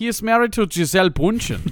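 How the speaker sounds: put-on Munich German accent. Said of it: "That's good pretty Munich good. Accent".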